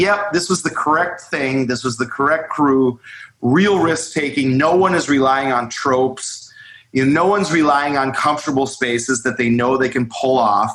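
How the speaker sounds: ordinary talk, nothing marked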